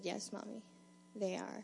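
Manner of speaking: calmest possible reassuring tone, acted. Retelling her son answering her question, imitating Nathan's calm voice. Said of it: "in the calmest voice".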